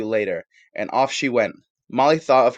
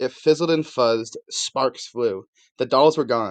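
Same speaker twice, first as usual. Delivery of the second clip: plain reading voice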